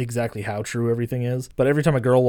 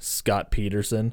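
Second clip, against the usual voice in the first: put-on deadpan delivery, lower and quieter; 3 semitones lower, 5 dB quieter than usual. Retelling a movie bar scene reply, imitating a deadpan delivery. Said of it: "in his deadpan".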